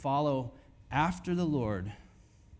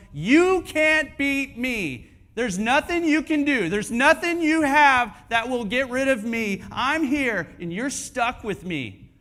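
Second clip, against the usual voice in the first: high, loud, taunting giant voice. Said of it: "taunting you and going".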